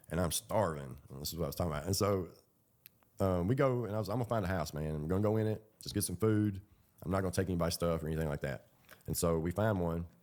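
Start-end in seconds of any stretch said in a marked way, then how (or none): none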